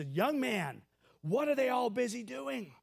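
mock yelling in frustration. Telling a story, acting out a frustrated man yelling at the little guy. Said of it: "And he yells at his voice".

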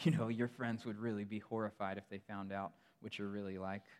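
put-on tempting whisper. Describing temptation in dark, lonely moments, speaking as Satan whispering. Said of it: "he whispers to you and he says".

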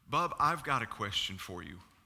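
grave, serious, stern tone. Retelling a mother's phone call to listeners, imitating her serious tone. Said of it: "it was a real serious tone".

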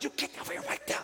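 forceful, urgent whispered shout. Recounting telling off a sneaking child in the night without waking others, acting out her own words, imitating scream whispering. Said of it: "The whole time I'm scream whispering".

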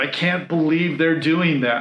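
ordinary delivery

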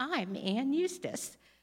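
odd put-on self-important voice, high and haughty. Retelling how she strutted around with the speaker's purse and glasses, in a weird voice. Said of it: "she would use this weird voice".

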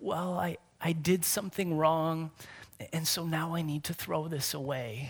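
soft, quiet, downcast, sad and sorry tone. A parent retells what their five-year-old said, imitating quiet speech. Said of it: "just quietly says".

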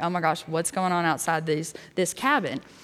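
put-on nervous voice. Retelling own reaction to the intern's news: retelling own nervous words. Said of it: "I'm nervous".

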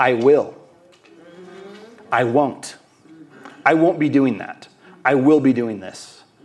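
strong, firm, certain, powerful voice. Contrasting a powerless voice with its opposite, the speaker demonstrates the powerful voice. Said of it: "The powerful voice sounds like this".

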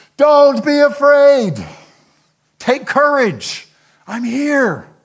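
very loud, very high, slow shout. Retelling Jesus calling to the disciples over waves: shouting over the wind. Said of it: "He must have had to shout over the waves".

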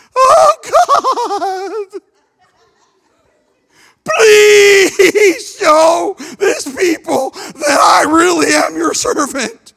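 very slow, high, squeaky, plaintive, drawn out. Acting out a plaintive prayer to God, high squeaky Sister Rachel voice. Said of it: "I think it was in a high, squeaky voice, ... I think it was plaintive".

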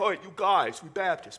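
slow, drawn-out, put-on Northern US accent. Speaker at a southern baptist church imagining speaking northern, put-on northern accent. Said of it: "If we were Northern accent".

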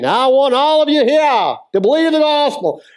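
very high, put-on Texas accent. Quoting an evangelist in a football stadium, in a Billy Graham Texas accent. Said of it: "in his Texas accent".

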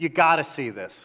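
playful put-on New York accent. Imitating someone recommending a movie at work: joking New York accent. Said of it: "you won't say it with a New York accent".

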